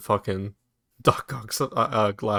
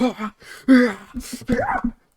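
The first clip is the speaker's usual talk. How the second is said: very high, hyped-up gasping cry. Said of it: "You're just like".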